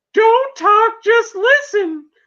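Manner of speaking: very high, drawn-out whiny voice. Retelling a man's call to the Milwaukee Police Department, imitating a high-pitched whiny voice. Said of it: "In his like high pitched like whiny voice".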